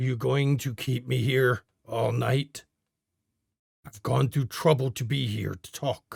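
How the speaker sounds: hoarse, rasping, raspy voice. Voicing someone calling down a hallway: raspy voice. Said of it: "a voice, raspy, echoes down the hallway".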